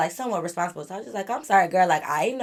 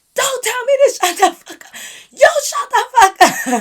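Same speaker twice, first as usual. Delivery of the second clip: shrill, very loud, high-pitched yelling at full blast; 10 dB louder than usual. Retelling an argument outside the car: retelling own yell. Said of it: "Don't yell at my friend".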